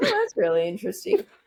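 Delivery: high-pitched, sarcastic-sounding acted delivery. Retelling own habit of answering a co-presenter: imitating own sarcastic-sounding tone. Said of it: "there was no sarcasm, despite the tone of my voice".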